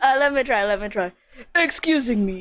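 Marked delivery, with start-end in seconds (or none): 1.5-2.4 clumsy, badly done put-on Russian accent. Asked whether to be Russian, trying it out: bad Russian accent. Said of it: "I don't have a good Russian accent".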